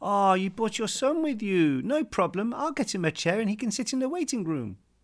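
very high, cutesy, condescending voice. Retelling what the person they were meeting said to the speaker's dad: imitating a cute voice. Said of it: "said to my dad in a cute voice".

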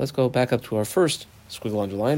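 ordinary delivery

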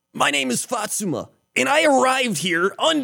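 very high, heroic anime warrior voice. Asked to play a warrior who is really a high schooler, speaker introduces herself in an anime voice. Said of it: "Give me an anime voice".

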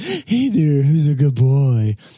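put-on cooing, high, sing-song baby talk. Describing a podcast idea for dogs, the speaker shows the voice people use talking to dogs. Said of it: "it's a podcast using that voice".

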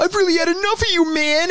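put-on very high, earnest small-child voice. Retelling a Steve-O line spoken earnestly to a bird: imitating Steve-O like a little kid. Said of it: "He's like a little kid".

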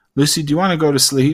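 playful, half-kidding, teasing acted tone. Retelling a question to a tired Lucy on the couch, retelling a joking question. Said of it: "I just jokingly said".

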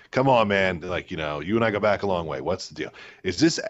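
ordinary talk

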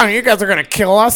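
acted-out, high-pitched, derisive, taunting tone. Retelling someone one-upping them in a negotiation, imitating a mocking voice. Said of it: "He does like the mocking voice".

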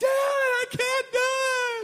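put-on five-year-old's very high, very loud, slow scream. Father retelling his eighteen-year-old son on the ski slope: imitating son screaming. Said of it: "He's screaming like he's 5 years old".

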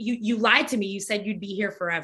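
ordinary talk, nothing marked

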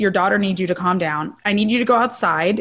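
plain

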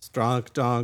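flat, bored, very low robotic monotone drone. Describing a crowd made up of robots, the speaker voices them in a robotic monotone. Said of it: "so they're just all monotone".

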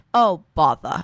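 put-on British accent. She pretends to be Winnie the Pooh saying goodbye: British accent as Winnie the Pooh. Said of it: "she does a British accent and she goes".

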